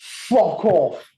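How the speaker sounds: high, loud yelling. Retelling how a bandmate told a stage crasher off: imitating a loud shout. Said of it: "so loud down the P A".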